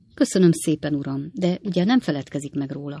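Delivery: ordinary delivery, nothing marked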